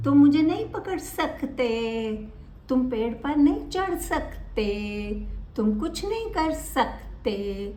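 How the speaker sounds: stress placed on the word सकते.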